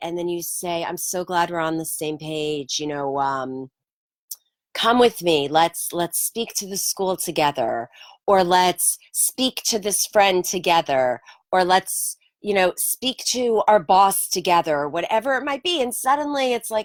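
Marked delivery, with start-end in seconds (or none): none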